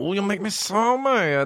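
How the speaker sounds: put-on drawn-out, very high, squeaky child voice. Recalling a younger cousin's catchphrase, doing his funny little voice. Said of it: "he had a funny little voice".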